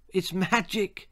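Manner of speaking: with a giggle. A girl holds out a sack of grass seed, giggling. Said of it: "she giggled".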